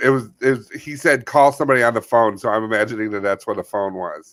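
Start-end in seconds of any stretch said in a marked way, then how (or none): none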